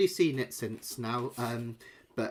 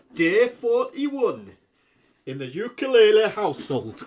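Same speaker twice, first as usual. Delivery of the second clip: very loud, high, terrible Newcastle accent; 9 semitones higher, 9 dB louder than usual. Sitting in a chair like the Big Brother one, announcing in a bad Newcastle accent. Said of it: "That's my terrible Newcastle accent".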